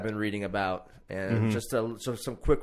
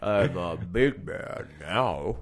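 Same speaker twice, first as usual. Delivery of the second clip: fake, put-on deep, low big-man voice; 4 semitones lower than usual. Joking about sounding small, then dropping into a fake deep voice. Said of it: "Sometimes you gotta get real low".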